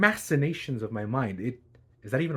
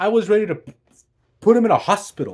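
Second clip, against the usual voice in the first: ordinary delivery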